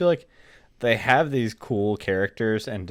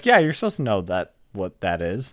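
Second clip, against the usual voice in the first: dry, unbothered, no-reaction deadpan. Acting out how a game responds with no reaction, imitating a deadpan reply. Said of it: "It's total deadpan, like no reaction".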